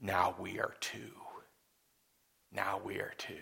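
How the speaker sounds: deep, rough, low voice, quiet and raspy. Batman suddenly appears beside someone standing against evil in Gotham City, in a deep Batman voice. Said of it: "in that deep voice".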